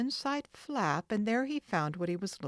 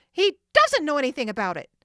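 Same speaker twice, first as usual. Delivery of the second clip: very loud, shrill, furious high-pitched shout; 6 semitones higher, 11 dB louder than usual. Narrator reading a woman's reply to Frank, shrilling angrily. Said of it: "shrilled the woman angrily".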